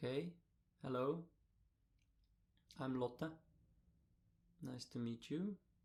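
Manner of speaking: slow, uncomfortable, awkward delivery. Retelling her answer to the greeting: imitating an awkward reply. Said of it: "she responded a bit also with awkwardness".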